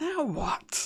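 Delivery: angry whisper. Voicing a creature behind a door after a failed push: irate whisper. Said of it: "a fairly kinda irate whisper".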